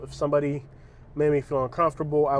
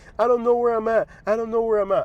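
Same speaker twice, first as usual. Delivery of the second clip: high, loud sobbing, screaming wail; 8 semitones higher, 5 dB louder than usual. An Uber driver retells a passenger who refused to get out: imitating crying, screaming passenger. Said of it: "She's like crying and then she's like starts screaming".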